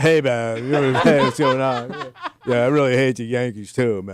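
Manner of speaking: loud, slow, easy surfer-dude drawl. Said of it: "He didn't sound like the Beach Boys".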